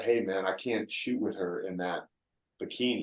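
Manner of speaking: very quiet, hushed half-whisper. Retelling a remark made to a photographer at a shoot: retelling a half-whisper. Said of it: "I whispered to the photographer".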